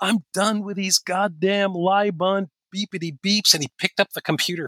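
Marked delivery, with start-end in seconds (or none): 0.0-3.5 fed-up, furious outburst, high drawn-out enraged scream. Retelling how a quiet coworker suddenly snapped: imitating a coworker screaming. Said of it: "he screamed".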